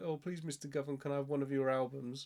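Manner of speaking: usual speaking voice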